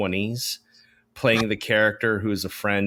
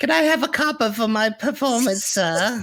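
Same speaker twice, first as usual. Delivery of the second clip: very high street urchin voice; 14 semitones higher, 3 dB louder than usual. Describing a performance throughout the movie, doing a Dickens street urchin voice. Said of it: "a Charles Dickens street urchin".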